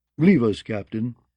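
plain reading voice

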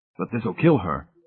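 plain reading voice

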